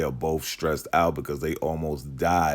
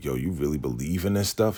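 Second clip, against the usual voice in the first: ordinary talk, nothing marked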